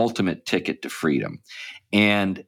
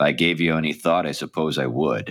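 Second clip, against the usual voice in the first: deadpan delivery, lower pitch; 2 semitones lower than usual. Retelling a Casablanca scene, the speaker quotes Rick's reply with a put-on deadpan. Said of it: "Rick in a deadpan voice says".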